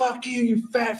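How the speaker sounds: put-on yelling. Retelling friends heckling a wrestler from the front row: imitating friends yelling. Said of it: "yelling at King Kong Bundy".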